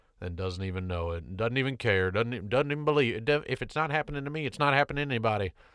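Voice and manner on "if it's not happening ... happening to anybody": put-on country accent, high and rattled off quickly. Mimicking a man who doesn't believe in the virus: country accent. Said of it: "I use a country accent".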